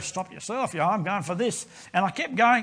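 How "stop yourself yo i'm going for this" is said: muttering under breath, quieter. Retelling being told to stop by Dad: retelling muttering under breath. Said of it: "I'm going under my breath".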